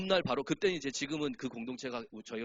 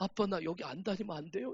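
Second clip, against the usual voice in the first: put-on high, tearful crying child voice; 5 semitones higher, 4 dB quieter than usual. Retelling a tired child's plea to stop attending, imitating crying. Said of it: "어느 날 막 울면서 그래요".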